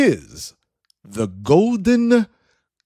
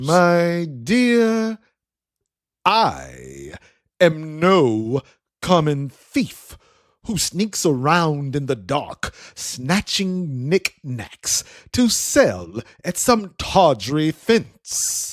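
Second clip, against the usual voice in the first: slow reply with a slight hint of disgust. Sir Hemmingsworth replying to Camille, with a slight hint of disgust. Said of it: "replies with a slight hint of disgust in his voice".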